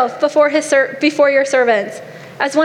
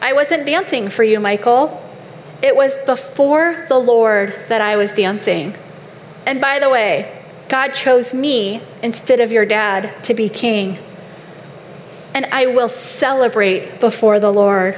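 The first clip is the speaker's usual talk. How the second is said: plain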